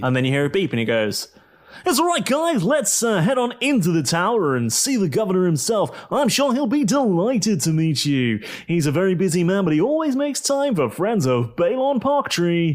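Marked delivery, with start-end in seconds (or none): 1.9-12.8 radio DJ presenter voice, pitched higher. After a beep, inviting the guests to meet the governor, in Balon Parktree's radio presenter voice. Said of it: "my presenter voice for Balon Parktree on the radio".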